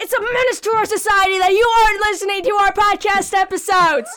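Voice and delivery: angry, harsh, scolding tone. Podcast host proposes a segment berating listeners, J. Jonah Jameson style. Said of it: "Jonah Jameson style".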